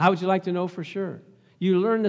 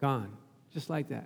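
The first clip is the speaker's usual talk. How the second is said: normal talking voice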